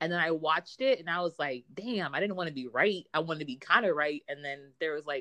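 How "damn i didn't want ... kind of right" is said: ordinary talk, nothing marked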